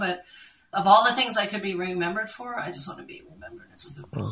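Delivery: tearful, teary, heartfelt, emotional delivery. Answering the other speaker's question about herself, teary. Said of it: "I'm teary now".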